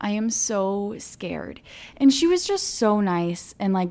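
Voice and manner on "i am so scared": put-on crying, tearful, very slow and dragged out. Retelling a birth story, telling the nurse: retelling own crying. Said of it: "I am crying and I say".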